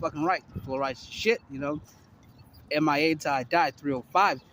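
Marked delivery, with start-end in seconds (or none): none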